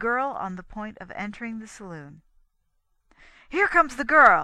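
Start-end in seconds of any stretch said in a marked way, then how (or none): 3.5-4.4 very loud, high, thrilled excited shout. A man sees the girl about to enter the saloon, crying out excitedly. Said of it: "he cried excitedly".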